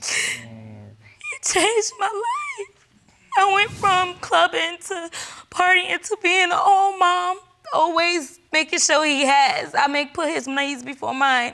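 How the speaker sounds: tearful, sobbing, high, swooping voice. A mother, asked about her son, answers: crying.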